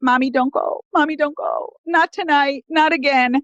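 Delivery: put-on tearful little child voice, crying. A mother retells her son blocking the door as she leaves: imitating a crying child. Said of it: "And he's just crying".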